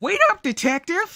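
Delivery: voice cracking. Calling after a detective when the voice cracks. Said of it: "My voice cracked".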